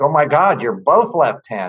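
put-on shriek. Recalling a dinner where a man's wife saw they were both left-handed, imitating a shriek. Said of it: "his wife sort of shrieks like".

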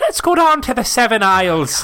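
loud, high, put-on leprechaun-style Irish accent. Joking about a store with seven aisles: put-on Irish accent. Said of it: "the Irish accent?".

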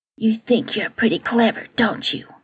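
hushed, soft, furious voice. Reading a story where a teacher confronts a student alone: soft but angry voice. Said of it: "in a very soft but angry voice".

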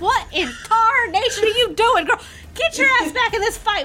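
scream. Retelling the captain yelling at a girl who hugs him mid-fight, retelling a scream. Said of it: "he starts screaming at you".

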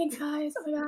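put-on whisper. Retelling how someone answered the group: imitating a whisper. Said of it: "She, like, whispered".

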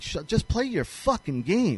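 ordinary talk

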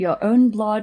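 accent from the north of England. Repeating a phrase from the conversation: northern english accent. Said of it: "I love that you're Northern accenting this".

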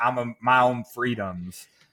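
put-on, very Southern accent, slow and drawled. Voicing an American who resists being told what to do, in a Southern accent. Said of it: "I went very Southern there".

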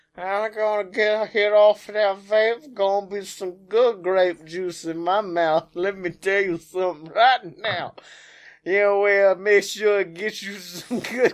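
put-on Louisiana accent. Chatting with friends about a helper he pays in vape hits, Cajun accent. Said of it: "When did he turn Cajun?".

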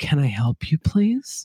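eerie, creepy, unsettling horror-movie voice. Imagining turning slowly toward visitors while playing with blocks: creepy Shining-style voice. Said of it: "The Shining thing where I'd be playing blocks and just, like, slowly turn my head".

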